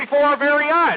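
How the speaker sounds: plain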